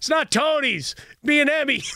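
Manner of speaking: mock very high, stretched-out shout. Retelling how someone yelled during a TV shoot: imitating someone yelling. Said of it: "you hear someone yell".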